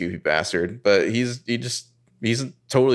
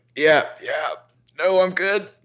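husky, high-pitched, overdone nonchalance; 6 semitones higher than usual. Recapping a scene, imitating Ezra acting normal: husky Ezra voice. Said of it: "he's getting straight up husky here".

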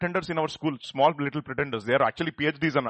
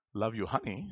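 level, robotic, machine-like delivery; 5 semitones lower, 8 dB quieter than usual. Illustrating to listeners how pretended love sounds, robotic delivery. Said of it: "That sounded so robotic".

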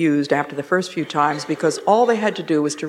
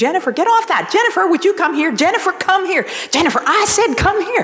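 repeated high, shrill screaming, pitched way up; 13 semitones higher, 4 dB louder than usual. Telling a story from an airport, the speaker acts out a mother calling her toddler, imitating a mother screaming. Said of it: "the mother was sitting there screaming".

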